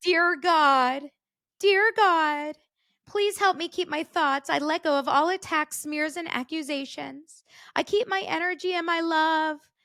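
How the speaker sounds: put-on high, sweet, sing-song kids' host voice.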